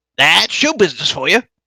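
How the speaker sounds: put-on loud, high-pitched mad wizard voice. A narrator voices a marching figure answering a question, imitating the Mad Mage's voice. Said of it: "like he's trying to replicate the Mad Mage's voice".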